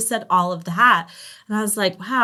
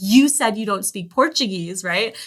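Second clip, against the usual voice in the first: angry, confrontational delivery. Retelling what a woman said as she walked up: imitating an angry woman. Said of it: "That same woman walks up to me really angry".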